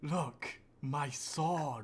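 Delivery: hushed theatrical stage whisper. Speaker in a role-play scene, addressing the group: stage whisper. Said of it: "Stage whisper".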